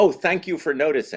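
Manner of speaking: put-on, very high, genuinely pleased, grateful tone. Retelling how Vincent delivered the line: imitating Vincent's thankful delivery. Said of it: "when you hear Vincent say it, it sounds like".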